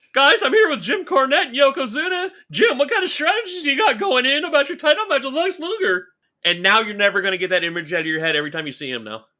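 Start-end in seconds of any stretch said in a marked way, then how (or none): 0.2-6.1 very high, gawky cartoon kid voice. Mocking an interviewer's voice: pimply faced kid from The Simpsons voice. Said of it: "it was that character every time".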